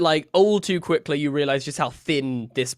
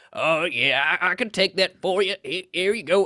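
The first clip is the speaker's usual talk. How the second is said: put-on elderly man voice, like an old gnome; 3 semitones higher than usual. Narrating a scene, the speaker voices an older man who comes over; old man voice. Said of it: "an older guy with like a little walking".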